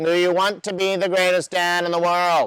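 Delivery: high, very nasal voice, all through the nose. Quoting a man who had a very nasally voice, in a nasal voice. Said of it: "in his very nasally voice".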